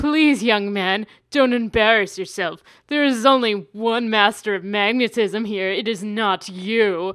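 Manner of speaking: put-on elderly man's voice, put on. Retelling what a man said in a story, put-on old man voice. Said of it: "I feel like that's just kind of like my old man voice".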